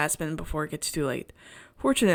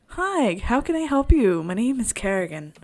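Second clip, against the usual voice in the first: high, helpful, polite customer-service voice; 5 semitones higher, 5 dB louder than usual. Speaker shows the voice everyone uses working customer service: customer service voice. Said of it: "you have your customer service voice".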